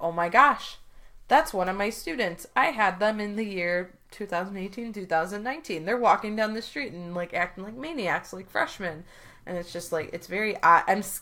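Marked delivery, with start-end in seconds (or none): none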